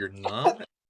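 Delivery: small, crestfallen, deflated, disappointed tone. Retelling how Arilo answered the innkeeper: imitating a disappointed reply. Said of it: "Arilo sounded very disappointed there. He's like".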